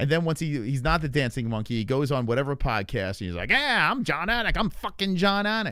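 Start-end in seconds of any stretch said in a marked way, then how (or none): 3.5-5.7 put-on tough-guy swagger, pitched higher. Mocking a commentator on a podcast: mock tough-guy Jon Anik voice. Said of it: "some sort of tough guy".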